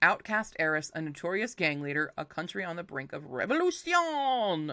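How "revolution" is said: "revolution" pitched up, in a French accent. Reading a book blurb, saying revolution with a french accent. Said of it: "I can't say that without the French".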